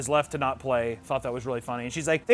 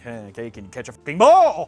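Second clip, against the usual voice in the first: acted, worked-up, exasperated, loud, rising angry outburst; 2 semitones lower, 6 dB louder than usual. Retelling how Brett got mad at Enna about football: imitating Brett getting mad. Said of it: "Gets all mad".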